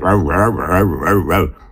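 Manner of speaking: put-on barking voice with American accent.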